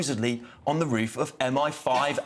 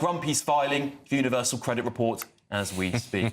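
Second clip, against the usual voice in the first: ordinary delivery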